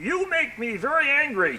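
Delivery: drawn-out, high, slow, sing-song cartoon spaceman voice. Retelling what the cartoon Martian says on landing: imitating the cartoon Martian. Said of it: "then there was the Martian ... he'd say".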